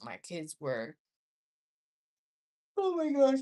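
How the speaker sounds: talking through a yawn. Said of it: "I keep yawning".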